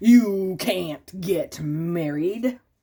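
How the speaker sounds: slow, ominous, scary bug voice. Narrating a story, the stink bug interrupts the cheering friends, in a scary stink bug voice. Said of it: "Said a scary voice".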